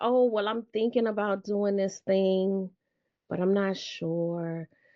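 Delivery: small, shrunken, unsure voice, drawn-out "sure". Imitating clients met through a podcast: imitating a shrunken voice. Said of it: "talking in that shrunken voice".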